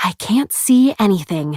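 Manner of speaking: fake sweetness. Narrator voicing Blair just after she plows over books, falsely sweet tone. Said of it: "she says in a falsely sweet tone".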